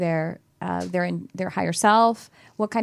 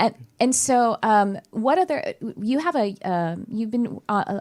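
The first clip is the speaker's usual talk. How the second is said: stuttering, stammering speech; 4 semitones higher than usual. Asking the other speaker a follow-up question, stuttering. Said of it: "I'm stuttering a lot today".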